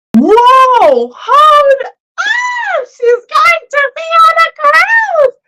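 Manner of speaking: loud, excited shout.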